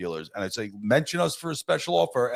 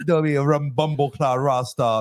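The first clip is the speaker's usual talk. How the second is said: bad fake Caribbean accent, much higher, louder; 5 semitones higher, 5 dB louder than usual. Mocking his brother's Caribbean accent, in a bad Caribbean accent. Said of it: "Your Caribbean accent fucking sucks".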